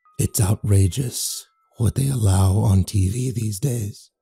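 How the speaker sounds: echoey, flat, low, slow deadpan delivery. A strange creature looks down at the narrator and remarks, echoey, deadpan voice. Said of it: "it remarked in an echoey, deadpan voice".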